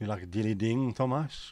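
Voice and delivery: put-on French accent. Reading a line aloud on the show in a French accent. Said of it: "Why did I read that in a French accent?".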